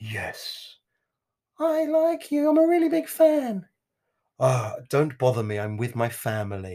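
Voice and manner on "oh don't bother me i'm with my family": very posh, rude, dismissive voice. Retelling a celebrity's reply to a fan who recognized him, in a posh Pierce Brosnan voice. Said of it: "I just make him posh".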